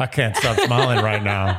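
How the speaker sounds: commercial-style catchphrase delivery. Picturing the lead in a Pepsi commercial: imitating Clayton in a Pepsi commercial. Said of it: "a Pepsi commercial".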